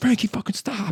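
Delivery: high-pitched, fed-up pleading, begging tone. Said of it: "I'd always be like".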